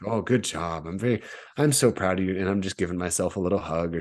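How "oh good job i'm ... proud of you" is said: put-on nice, caring voice. Retelling kind self-talk from a race: put-on nice caring voice. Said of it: "just a nice little caring voice".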